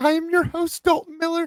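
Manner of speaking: voice cracking up very high. A podcast host introduces himself at the start of the episode: voice cracking high. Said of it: "my voice just got high and it cracked".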